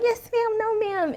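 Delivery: play-acted meek, very high, mild little voice, slow. Retelling being quiet at a salon: imitating her own meek voice. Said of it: "this meek and mild little creature".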